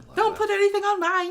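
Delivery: failed, very high, loud put-on Birmingham accent. Trying a birmingham accent on a chip order: attempted birmingham accent. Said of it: "I was supposed to be Birmingham".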